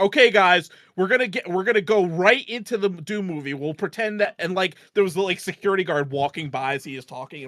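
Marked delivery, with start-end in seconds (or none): 0.0-4.3 loud, high-pitched yelling. Retelling a friend announcing plans in a theater lobby: imitating someone yelling. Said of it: "yelling out the plans".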